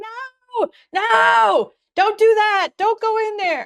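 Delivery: very high, drawn-out, pleading scream. Retelling screaming at the screen while watching: retelling screaming at the screen. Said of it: "screaming at the screen like".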